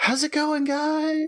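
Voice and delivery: very high ghostly voice. Game narrator voicing someone in the drawing room greeting the players, in a ghostly voice. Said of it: "you hear a ghostly voice from within go".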